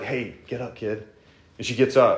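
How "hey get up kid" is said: acted, matter-of-fact, casual, offhand, unhurried delivery. Retelling a healing story, imitating Jesus casually and offhand. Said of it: "he's just very much like, "Speak it and move on."".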